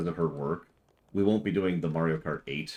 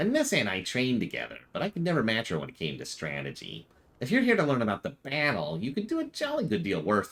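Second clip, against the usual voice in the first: put-on swooping, sing-song gnome voice; 4 semitones higher than usual. Voicing the character Warwick in a scene, Warwick in a gnome voice. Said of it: "I'll do Warwick with a gnome voice".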